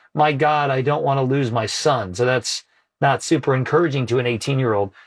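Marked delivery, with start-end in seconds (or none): none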